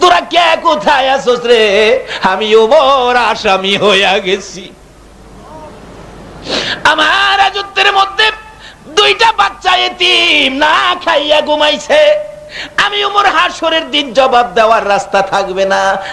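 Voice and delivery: anguished shout.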